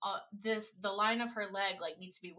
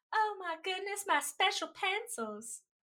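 cartoonish, very high-pitched anime girl voice; 11 semitones higher than usual. Speaker describing a show to the other speaker, imitating a show character's voice. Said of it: "That's her voice the, in- the entire time".

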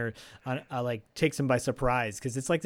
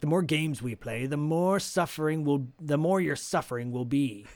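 alien character voice. Recapping a movie, acting out the alien answering the girl who controls him: Psycho Goreman voice. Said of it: "And then suddenly the alien walks out and he goes".

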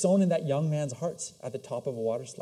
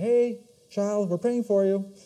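mock calling out at full, raised shout; 7 semitones higher than usual. Retelling how a man called out to a lifeguard: imitating someone shouting. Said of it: "just shouting".

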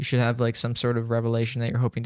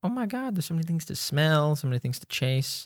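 high, excited cat voice. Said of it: "she'll be like".

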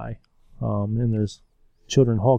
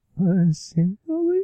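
mock drunken, high, miserable, depressed voice; 8 semitones higher than usual. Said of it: "super drunk and super depressed".

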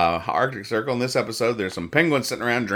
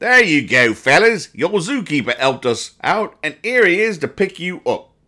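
put-on British police officer accent, raised pitch; 6 semitones higher, 5 dB louder than usual. Telling a cartoon joke, voicing the British policeman speaking to two penguins, in a British accent. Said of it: "I'm going to do this in a British accent".

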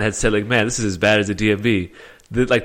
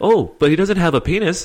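mock breezy, matter-of-fact, nonchalant, pitched up; 8 semitones higher than usual. Retelling what a relative said about a body: imitating someone saying it nonchalantly. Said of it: "She said it so nonchalantly".

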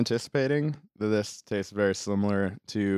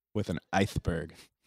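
put-on lisp, lower and quieter; 2 semitones lower, 4 dB quieter than usual. Telling a Mike Tyson joke, the speaker delivers the punchline in a Mike Tyson lisp impression. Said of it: "So speaking of lisps".

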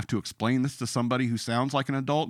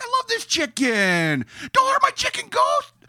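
very high, loud, sing-song, fussy, fretting doting voice; 6 dB louder than usual. Retelling how a player fussed over a chicken: imitating Critical Hats. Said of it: "That's my imitation of him again".

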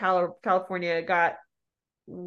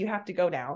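normal talking voice

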